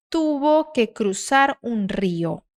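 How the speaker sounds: slow, careful reading aloud in Spanish. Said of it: "Treina essa palavra aqui".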